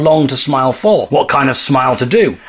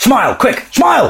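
too loud, speaking loudly and higher; 8 semitones higher than usual. Urging a friend to smile while a girl looks over: too loud. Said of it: "Keep your voice down".

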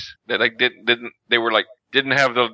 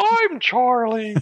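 tiny, very high, squeaky toy-elf voice; 12 semitones higher than usual. Showing how Charlie talks on voicemails: imitating the elf from the Island of Misfit Toys. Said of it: "like the elf from the Island of Misfit Toys".

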